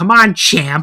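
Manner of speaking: very loud, shrill, sour and bitter sarcastic shout. Retelling a woman yelling out during a match as another wrestler gets beaten, mock bitter sarcastic yell. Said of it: "in a very like bitter, like sarcastic way".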